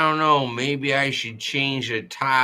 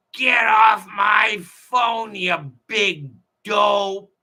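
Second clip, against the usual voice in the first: put-on furious, high, angry radio-host yell; 8 semitones higher, 3 dB louder than usual. Retelling how Mark Levin gets mad at callers: imitating Mark Levin yelling. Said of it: "he just yells".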